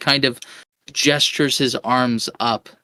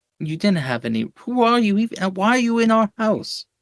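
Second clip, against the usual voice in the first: put-on whiny teenager voice, higher pitch; 8 semitones higher than usual. Voicing a character whose door was smashed: whiny teenager voice. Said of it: "a little bit of a whiny teenager".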